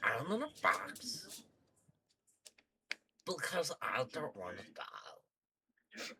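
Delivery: animated alien creature voice. Voicing a kobold hiding in a box, in a Stitch voice. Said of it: "What's with the Stitch voice?".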